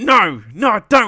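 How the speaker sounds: high, loud, flustered blurting. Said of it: "He's like".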